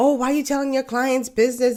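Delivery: mock huffy, offended indignation, pitched high. Quoting people who complain about these stories: imitating upset people. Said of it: "how people will get upset".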